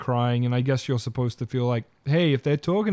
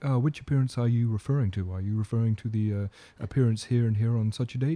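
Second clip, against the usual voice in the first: composed, sedate, proper and articulate formal delivery; 2 semitones lower, 4 dB quieter than usual. Retelling an aide's reply to the mayor: imitating a formal, well-spoken tone. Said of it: "very sort of formal and sedate and well-spoken and articulated tone".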